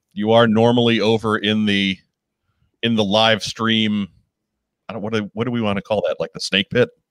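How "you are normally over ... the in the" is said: usual speaking voice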